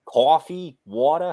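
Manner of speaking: put-on New Jersey accent. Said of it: "what's called a Jersey accent".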